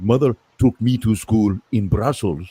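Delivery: put-on weird, odd Belgian-French accented English. Discussing how a movie explains a star's accent, with Van Damme's weird accent. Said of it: "Von Damme and his weird accent".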